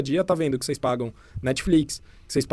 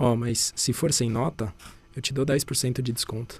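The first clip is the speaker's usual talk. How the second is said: soft, hushed murmur; 6 dB quieter than usual. Retelling a side conversation overheard at a coworking office, speaking softly. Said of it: "Meio que falando baixinho".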